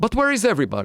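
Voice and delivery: put-on Italian accent. Retelling a physicist's question to his colleagues, Enrico Fermi, Italian accent. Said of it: "in an Italian accent".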